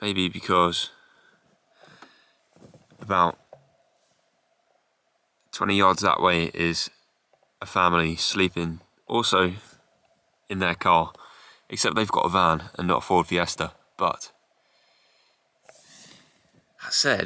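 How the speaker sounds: quiet, hushed speaking voice. Vlogger sleeping in their car with a family parked nearby, speaking quietly. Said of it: "I don't know why I'm speaking quietly".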